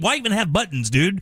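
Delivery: ordinary talk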